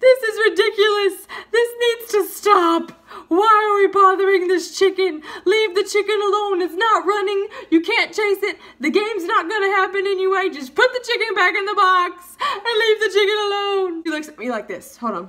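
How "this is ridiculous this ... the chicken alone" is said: loud, very high, tearful, pleading crying outburst. Retelling taking the mic to stop a chicken game: imitating own crying plea. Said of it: "and I'm crying, so I'm like this".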